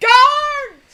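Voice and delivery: put-on yell. Retelling a movie scene where a character calls for guards, imitating a yell. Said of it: "he yells for the guards".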